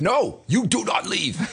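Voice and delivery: stern, high, slow, commanding MC voice.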